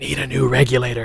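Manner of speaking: secretive, hushed, under-the-breath stage whisper. Retelling a friend's hidden advice while fixing equipment: imitating a half-whisper.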